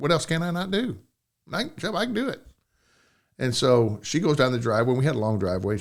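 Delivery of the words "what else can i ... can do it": play-acted snide, sarcastic, high-pitched delivery. Retelling his words to a woman as he put her in her car, sarcastically. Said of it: "I sarcastically said".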